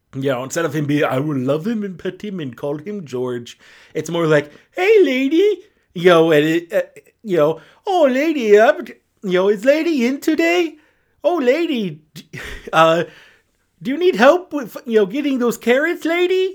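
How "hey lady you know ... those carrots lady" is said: put-on sweet, goofy childlike creature voice, much higher, slower. Describing how an old cartoon character talks, in a sweet, childlike, goofy voice. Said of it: "sweet, innocent, childlike, and it's goofy".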